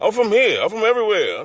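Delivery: put-on Nigerian accent with voice pitched way up. Retelling what a stranger answered when asked where he's from: imitating a Nigerian accent. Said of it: "he had that, that Nigerian accent".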